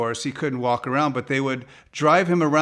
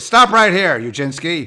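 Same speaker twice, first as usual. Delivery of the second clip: raised calling voice, dad-like; 3 semitones higher, 7 dB louder than usual. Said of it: "impression of your dad".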